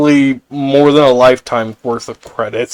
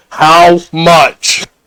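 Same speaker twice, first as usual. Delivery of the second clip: speaking up in a raised, high-pitched voice; 5 semitones higher, 5 dB louder than usual. In a role-play, haggling over a donation to an orphanage, with a raised voice. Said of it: "raising up my voice and I'm saying".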